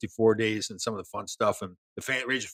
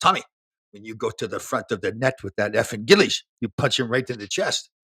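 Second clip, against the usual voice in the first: put-on speaking with French accent. Retelling his mentor's advice during a game against the Islanders: French accent impression. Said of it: "he comes to me with a French accent".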